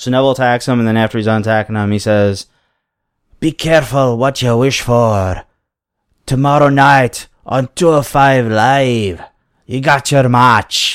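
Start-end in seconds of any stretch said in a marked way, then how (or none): 3.4-11.0 small, foreign-sounding monster-creature voice. Recounting what Neville said after attacking someone, do Neville as little foreign monster creature. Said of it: "You sound like a little foreign monster creature".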